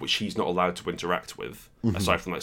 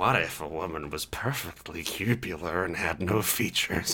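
put-on sexy voice; 3 dB quieter than usual. Doing a sexy Gary Gygax voice as a joke: sexy Gary Gygax voice. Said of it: "Please don't do that voice again".

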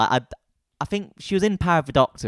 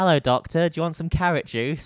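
sudden, unexpected put-on Cockney accent; 6 semitones higher than usual. Voicing a reinvented character's imagined entrance line, in a mock Cockney accent. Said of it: "I don't know why I've gone Cockney".

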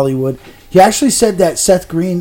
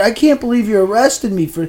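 mock-crying, put-on tearful voice; 7 semitones higher than usual. Retelling what the arrested woman said to the cop, imitating her crying. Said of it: "And she's crying the whole time".

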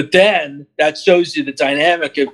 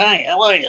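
weird little voice; 3 semitones higher than usual. Complaining about how the prequels voiced droids: weird little battle droid voice. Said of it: "the weird little voice they gave them too".

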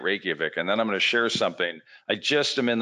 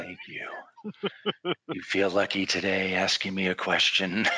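put-on gravelly tough-guy voice. Joking back about an airport encounter: Clint Eastwood impression. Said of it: "that same voice you're doing".

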